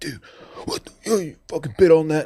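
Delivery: put-on high, heated yell, right in-your-face. Retelling how a defensive lineman yelled at him over a bet, imitating a teammate yelling. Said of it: "he's like yelling at me".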